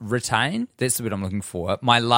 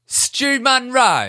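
very high, raised, best-effort put-on British accent; 14 semitones higher, 5 dB louder than usual. Saying someone's name on request, in their best british accent. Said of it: "Say my name in your best British accents".

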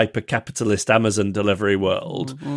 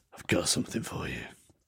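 breathy, put-on, disguised creepy whisper; 8 semitones lower, 13 dB quieter than usual. Playing a secret admirer in a comedy bit, disguised secret-admirer voice. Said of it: "It's a different voice".

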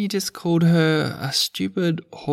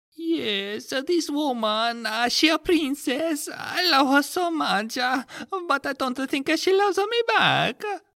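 put-on very high, hammed-up, over-the-top Italian accent; 9 semitones higher than usual. Playing a short client introducing himself to the therapist: highly offensive Italian accent as Mario. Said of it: "with a highly offensive Italian accent".

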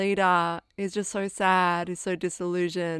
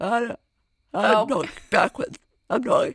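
loud speech spoken on the in-breath; 3 semitones higher, 5 dB louder than usual. Showing the fake backwards-talking voice invented out of boredom, talking while breathing in. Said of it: "instead of breathing out when you talk, you sort of breathe in".

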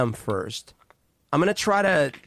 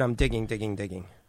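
ordinary talk, nothing marked

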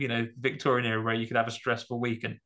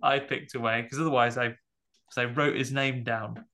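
ordinary talk

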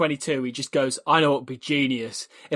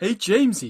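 goofy, high-pitched puppet voice; 5 semitones higher than usual. Greeting Jamesy mid-conversation, in an Ernie from the Muppets voice. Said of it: "we went into Ernie from the Muppets there".

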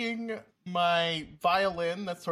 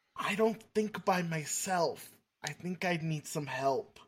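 half-whispered aside under the breath; 3 dB quieter than usual. Leaning over to ask for help while another talks: half-whispering in character. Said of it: "lean over and whisper".

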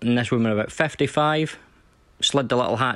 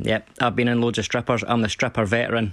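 usual speaking voice

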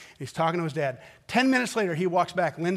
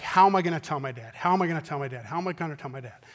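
fast, frantic, panicked repetition; 2 semitones lower than usual. Retelling a young man's words after he hit a car: imitating someone freaking out. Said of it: "he was just freaking out".

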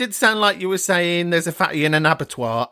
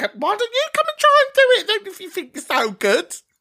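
much higher, loud, cheeky mocking retort. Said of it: "I would have gone".

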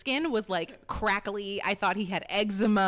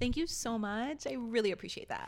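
professional-sounding voice. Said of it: "I could put on my social work voice".

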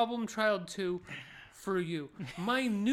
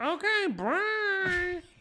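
put-on kid's very high voice, bruh stretched; 10 semitones higher than usual. Retelling what a kid said, imitating how the kid talks. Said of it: "the best impression you've ever heard of how this fucking kid talks".

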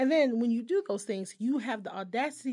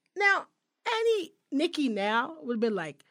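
normal talking voice

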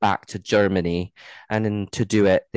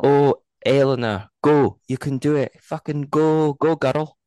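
put-on Scottish accent, pitched up, cheering; 6 semitones higher, 4 dB louder than usual. Recording encouragement for a listener, the speaker does a bit in a put-on scottish accent. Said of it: "definitely Scottish".

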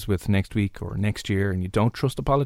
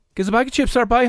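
imitated Cork accent; 13 semitones higher, 4 dB louder than usual. Guessing where a line's accent is from, imitated Cork accent. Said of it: "Has to be Cork".

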